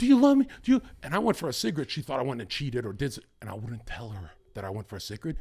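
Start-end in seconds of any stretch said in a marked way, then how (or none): 0.0-0.8 very high, loud, tearful sobbing voice. Speaker acts out his girlfriends pleading with him, imitating a girlfriend sobbing. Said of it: "watch my girlfriends cry and sob".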